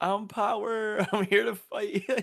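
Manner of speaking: mock screaming character voice. Retelling an anime scene where the character screams: imitating Power screaming. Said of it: "Power literally screamed at the top of her lungs".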